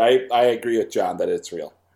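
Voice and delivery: laughing through the words, cracking up. Agreeing with another player's guess after a funny answer: laughing while talking. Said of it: "I'm laughing too hard".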